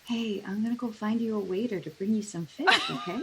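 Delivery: soft, hushed, half-whispered aside. Playing a character leaning down to speak to a companion: half-whispering. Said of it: "all I'm gonna whisper is".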